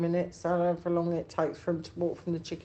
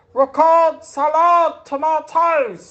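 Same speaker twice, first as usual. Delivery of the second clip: shrill, booming, very loud, high market-trader cry; 10 semitones higher, 15 dB louder than usual. Recalling a childhood street market in north london, imitating a market trader shouting. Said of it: "all the costermongers used to shout like that".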